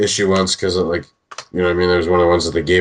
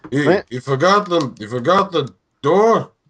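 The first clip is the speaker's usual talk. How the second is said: put-on old man voice, much higher; 9 semitones higher than usual.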